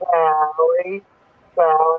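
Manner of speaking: put-on cramped denture speech, drawn out. Speaker shows how they sounded with new dentures, imitating talking with dentures. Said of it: "this is what it sounded like".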